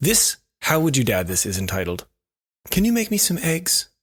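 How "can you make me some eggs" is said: put-on very high small child's voice. Announcing the title of a dad story to a co-host, in a kid voice. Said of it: "Is that a kid voice?".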